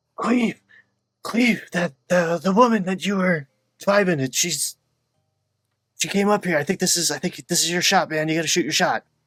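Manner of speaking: loud, theatrical stage whisper. Calling from a window to another character: stage whisper. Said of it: "stage whisper at Cleve".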